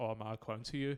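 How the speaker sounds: ordinary talk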